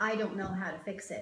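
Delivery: ordinary talk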